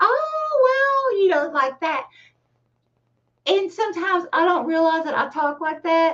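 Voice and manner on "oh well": Oh stretched out and pitched very high. Showing how a sitcom character talks: Edith Bunker voice. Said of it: "she talks kinda like".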